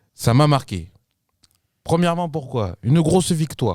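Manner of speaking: accent from Marseille. Talking about yesterday's PSG-Barça match, a big win: put-on Marseille accent. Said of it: "Pourquoi tu prends l'accent".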